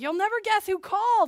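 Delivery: put-on booming, high, loud burst of excitement. Retelling how a surprising phone call was announced: imitating own excited voice. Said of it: "I just had this excitement in my voice".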